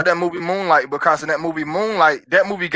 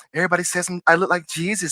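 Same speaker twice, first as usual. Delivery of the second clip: very soft, quiet, soft-spoken voice; 5 dB quieter than usual. Quoting a man from your story, doing his real soft voice. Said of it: "he had like this real soft voice".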